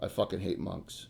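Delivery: deadpan monotone, quiet, near a whisper. Retelling Skagath's answer when asked about old D and D: imitating Skagath's monotone voice. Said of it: "He goes in his in his in his you know monotone voice".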